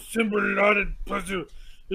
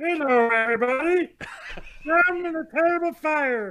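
pitched-up cartoon frog puppet voice; 7 semitones higher than usual. Asked to do it as Kermit the Frog, the speaker answers in Kermit the Frog voice. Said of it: "Now do it as Kermit the Frog".

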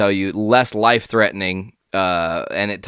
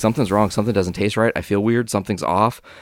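ordinary talk, nothing marked

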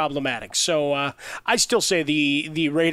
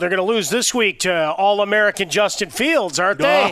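loud, high-pitched, dripping mock-admiring sarcasm; 5 semitones higher, 5 dB louder than usual. Discussing football predictions with another speaker, sarcastic. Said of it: "Did you not sense the sarcasm flowing out of my mouth".

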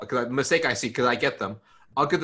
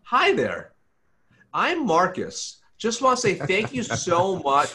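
fake polished, canned, sing-song, slow; 6 semitones higher than usual. Imitating people's pre-recorded office videos: imitating a fake, polished greeting. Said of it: "and it's very fake".

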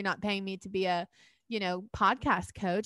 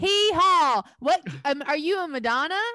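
put-on country bumpkin voice, higher and louder; 8 semitones higher, 8 dB louder than usual. Restarting the show's intro, playing a big country bumpkin character. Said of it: "I'll be a big country bumpkin character".

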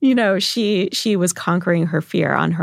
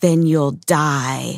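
mock-creepy, put-on creepy voice; 3 semitones lower than usual. A mother retells her child's jail game line: retelling a creepy line. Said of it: "she says creepily in my ear".

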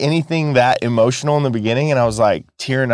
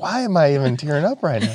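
usual speaking voice

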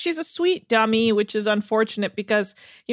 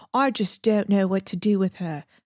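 rough Australian accent attempt; 3 semitones lower than usual. Recapping a TV episode, the speaker quotes Francesca, attempting her Australian accent. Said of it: "Let me try and do her Australian accent".

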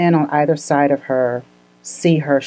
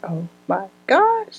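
high, slow, drawn-out awestruck gasp. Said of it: "And I was just like".

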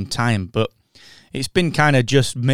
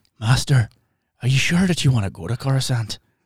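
exaggerated Irish accent, thicker than a real one. Mocking an audiobook narrator's Qui-Gon: over-the-top Irish Liam Neeson voice. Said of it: "Qui-Gon Jinn, Liam Neeson impressionist".

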